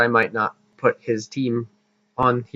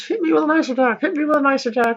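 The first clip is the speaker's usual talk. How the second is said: very high mock scream. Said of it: "a Flygon who screams".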